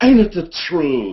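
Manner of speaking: timid, cowardly cartoon lion character voice. Recalling his role on a Disney World ride, the performer does the Cowardly Lion voice. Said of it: "If you hear the Cowardly Lion go".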